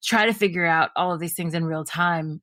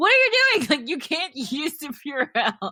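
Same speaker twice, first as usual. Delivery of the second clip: very high-pitched, swooping scream; 10 semitones higher than usual. Retelling how she reacted when her husband used the Purell: retelling a scream. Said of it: "I literally screamed at him".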